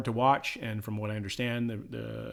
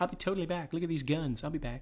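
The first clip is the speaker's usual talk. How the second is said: put-on high valley girl voice; 6 semitones higher than usual. Joking that the Terminator heroine quips her catchphrase: put-on valley girl voice. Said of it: "I'm from the valley".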